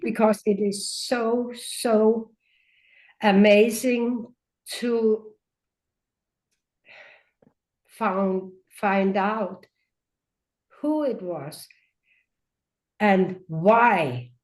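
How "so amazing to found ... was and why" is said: on the verge of crying. Recounting a deeply personal experience to a listener, near tears. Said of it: "I'm nearly crying now".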